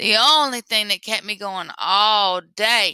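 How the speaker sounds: groaning. Bouki, heading to the bayou after a day picking cotton, groaning. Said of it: "he groaned".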